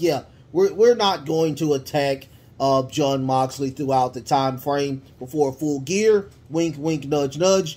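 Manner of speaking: ordinary delivery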